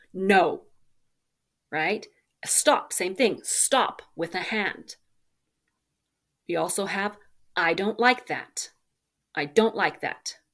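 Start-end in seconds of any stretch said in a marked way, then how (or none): 9.3-10.3 calm, clear, steady and firm. Teaching phrases for setting boundaries, said calm, clear and firm. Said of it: "Calm and clear and firm".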